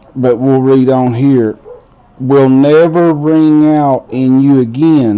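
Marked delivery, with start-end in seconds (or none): none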